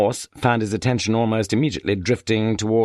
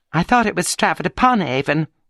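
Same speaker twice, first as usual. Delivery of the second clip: shrill, thin, piping, very high little chirrup; 7 semitones higher than usual. Narrator reading someone interrupting the speaker's address, in a shrill, thin voice. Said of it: "chirruped a shrill, thin voice".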